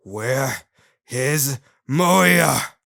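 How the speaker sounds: loud, furious, enraged, spat-out delivery. Reading a scene aloud where Shadow pins a cowering guard: pure rage. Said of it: "as he asks in pure rage".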